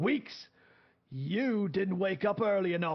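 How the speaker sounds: scolding tone in put-on Scottish accent. Narrating a man throwing clothes at the listener to wake them; Scottish accent. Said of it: "Scottish accent going through right now".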